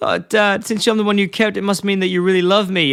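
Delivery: mock sobbing, high tearful crying voice. Speaker retells a character's line to his dad in a scene, imitating a character crying. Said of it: "Homer's crying and goes".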